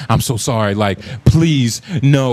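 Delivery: mock, slow, drawn-out pleading tone. Mocking how not to apologize: mock pleading apology. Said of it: "don't plead with a motherfucker".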